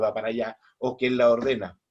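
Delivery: ordinary talk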